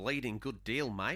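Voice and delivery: put-on Australian accent. Starting the next news item after being asked for a put-on Australian accent. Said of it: "say this in Australian accent".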